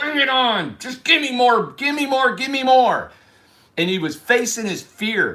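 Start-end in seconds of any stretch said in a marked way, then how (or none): 0.0-3.1 loud, high-pitched scream. Retelling a character screaming at God: imitating Captain Dan screaming. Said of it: "Screaming at God".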